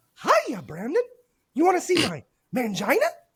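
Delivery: strained, squeaky, swooping, very high cartoon squeal. Trying again to reach a voice they can't yet hit, attempting a high-pitched voice. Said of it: "I can't reach that high pitch yet".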